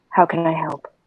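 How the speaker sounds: soft, half-whispered under the breath. Speaking in character to an anxious companion up close: half-whispering. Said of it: "whisper to him".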